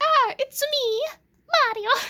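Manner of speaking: very high-pitched, loud cartoon character voice. Speaker talking about the Super Mario games does a Mario voice. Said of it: "I did that voice".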